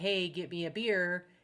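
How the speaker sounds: slow, unhurried, deliberate, demanding tone. Retelling how Vicky asked for a beer at the casino bar: imitating Vicky ordering a beer. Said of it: "And she said it just like that".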